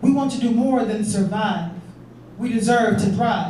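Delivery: ordinary delivery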